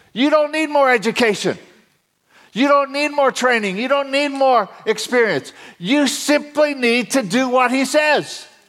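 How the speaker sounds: rising fervor, very high, excited preaching voice. Speaking to listeners about doing what God calls them to do, excited, voice going up. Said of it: "My voice goes up when I get excited".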